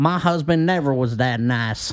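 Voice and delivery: slow, put-on Southern accent. Retelling what a character in the show said: imitating a Southern accent. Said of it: "that lady had the accent of a Southerner".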